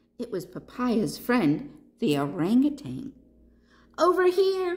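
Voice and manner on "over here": tiny, very high crying out. Reading a story, the panda calls to his friend during a storm: crying out. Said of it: "cried Papaya".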